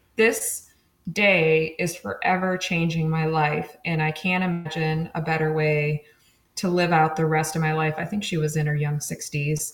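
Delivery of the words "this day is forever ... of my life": ordinary talk, nothing marked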